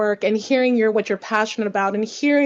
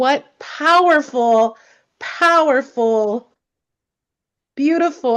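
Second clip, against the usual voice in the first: slow, deeply moved, overcome with feeling; 3 semitones higher than usual. Thanking the readers for their powerful readings, getting emotional. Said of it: "I get emotional".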